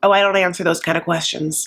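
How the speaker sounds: usual speaking voice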